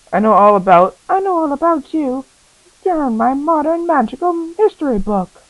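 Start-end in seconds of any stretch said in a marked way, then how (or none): 1.0-5.2 put-on, very high, generic woman's voice. Voicing a game character greeting Harry: generic female voice. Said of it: "This is a generic female voice".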